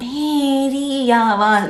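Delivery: odd put-on voice, very high and slow.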